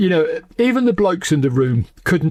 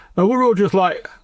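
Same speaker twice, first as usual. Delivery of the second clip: ordinary talk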